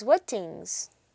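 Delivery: normal talking voice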